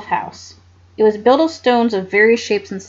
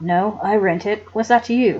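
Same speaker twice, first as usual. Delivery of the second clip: sullen, low, surly tone; 5 semitones lower, 5 dB quieter than usual. Reading a story aloud, a man answering a girl's polite request, in a surly tone. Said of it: "the man said in a surly tone".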